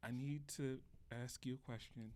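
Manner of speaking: mock dead-serious, grave, no-nonsense tone. Retelling a coworker asking to talk in the break room: imitating Mimi's serious tone. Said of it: "but she was very serious face".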